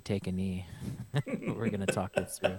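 creepy baseball coach voice. Speaker acting out what he tells people who ask for advice, creepy baseball coach voice. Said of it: "I sound like a creepy baseball coach".

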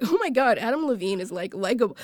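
ordinary talk

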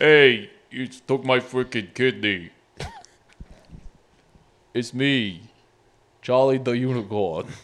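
slow, weird, drawled Brooklyn guy voice. The speaker voices a cartoon character introducing himself: Charlie the Unicorn, Brooklyn voice. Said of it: "where did this weird like Brooklyn fucking guy voice".

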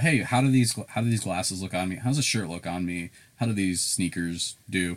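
ordinary talk

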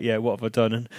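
put-on laughing voice. Describing a player's reaction to his goal, imitating him laughing. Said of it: "he was just kind of laughing".

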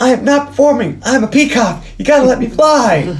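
put-on full-blown yelling, very high and shrill. Recapping a scene in which Terry starts yelling at everyone, retelling Terry's yell. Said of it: "he starts yelling".

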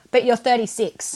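belittling, demeaning, condescending tone. Retelling a woman's remark about her age and having no children, mimicking a demeaning tone. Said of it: "in this really demeaning tone".

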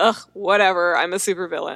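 imitated bored, over-it delivery. Imitating Elliot, who is over trying and being cool: imitating Elliot, over it. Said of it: "He's over being cool".

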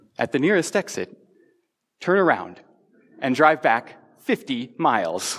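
bratty, snippy little know-it-all navigation voice. On a road trip, the speaker quotes the phone's map app; bratty Google Maps voice. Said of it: "that bratty little voice tells me is".

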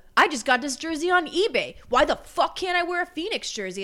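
huffy defensive tone. Retelling a man answering people who asked about his jersey, retelling a defensive outburst. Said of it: "why are you getting so defensive?".

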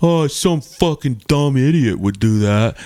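crummy, lousy-sounding put-on male voice. At a hockey game, retelling a reply; Heath's shitty voice. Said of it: "In his shitty voice".

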